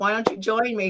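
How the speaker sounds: usual speaking voice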